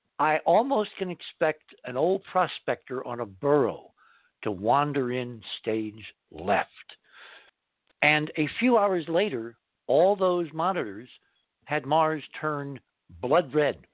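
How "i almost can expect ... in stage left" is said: usual speaking voice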